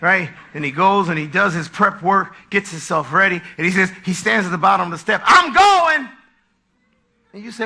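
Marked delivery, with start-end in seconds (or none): 5.2-6.1 loud, surly, grumpy, bad-attitude tone. Acting out a husband who gets up with a bad attitude: mock grumpy husband. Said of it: "He just gets up with a bad attitude".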